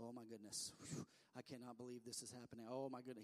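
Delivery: pretend anxious fretting. Acting out someone pacing and fretting in heaven: mock fretting. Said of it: "pacing and running and fretting up in heaven going".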